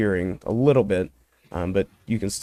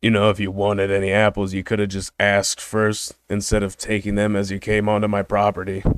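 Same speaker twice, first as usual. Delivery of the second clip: put-on grizzled old man voice. Voicing a property owner who scolds the players for taking apples: grizzled old man voice. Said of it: "kind of a grizzled old man".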